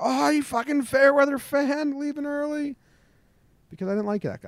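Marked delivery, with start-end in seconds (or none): 0.0-2.8 very high, taunting jeering yell. Retelling own taunt at a fan leaving the game: imitating own past taunting yell. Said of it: "I said".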